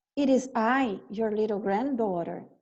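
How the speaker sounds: ordinary delivery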